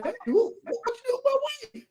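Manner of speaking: high, loud, mock holler. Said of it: "he's hollering over the speaker saying".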